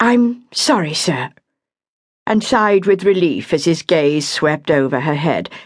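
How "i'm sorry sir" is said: courteous, respectful, polite tone, pitched up. She adds a reply to the man she calls sir, polite. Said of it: "she added politely".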